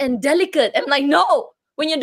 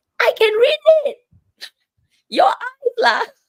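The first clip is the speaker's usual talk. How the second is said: very high, shrill, shouted yell; 10 semitones higher than usual. Retelling yelling back at the boss: imitating own past yelling. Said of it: "I would yell at her like".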